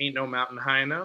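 ordinary delivery

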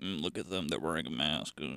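quiet disapproving mutter. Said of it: "silently mutter to themselves".

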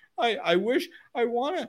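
high, whiny pleading voice. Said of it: "quit whining about it".

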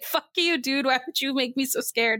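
acted, furious, lashing-out, really mad, angry outburst. Retelling how she gets really mad at him: imitating someone really mad. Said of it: "she gets really mad at him".

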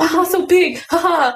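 mocking, ribbing chuckle. Retelling how an uncle made fun of a nose: imitating uncle making fun, laughing. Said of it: "And he's like".

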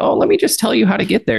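put-on eager old-timer voice, very high. Retelling how an old person offers directions: imitating an old person. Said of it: "Or or the old person, and they're like".

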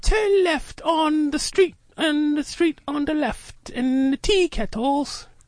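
very high put-on British accent. Speaker imitates someone's new phone GPS talking British, mock British GPS voice. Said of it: "In British voice".

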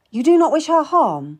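sharp, pointed, high voice. The narrator questions the one who wants to learn what she wants, asking sharply. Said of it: "I asked sharply".

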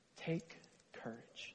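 breathy, hushed, near-silent whisper, close to the ear. Picturing Jesus in a prison cell comforting Paul: whispering as Jesus. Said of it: "as he whispers in Paul's ear".

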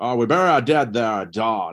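hammed-up, folksy hillbilly drawl. Imitating a guy's really hammy performance, in a hillbilly meets Jimmy Stewart voice. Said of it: "this really like hillbilly meets Jimmy Stewart type vernacular".

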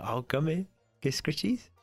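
sweet coaxing voice. Narrating a tabletop game, voicing strangers calling the player's animal over, coaxing a pet. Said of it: "And they go".

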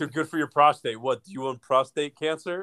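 put-on berating, pushy mock yelling. Retelling how a restaurant worker reacted to no tomatoes: imitating someone yelling. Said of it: "the guy looked at me and yelled at me".

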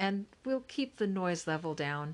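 plain reading voice

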